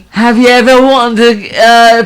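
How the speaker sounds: high, loud, slow mock British accent.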